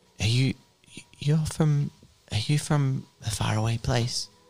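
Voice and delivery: gentle, soft-spoken. A game master voices a stranger answering the players, soft voice. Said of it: "A soft voice says".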